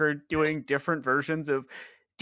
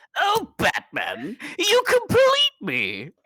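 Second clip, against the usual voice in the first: shrill, swooping, very high, loud sing-song villain voice; 12 semitones higher, 5 dB louder than usual. Bantering with others about Batman, the speaker does a Joker voice. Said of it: "switch up the version of Joker".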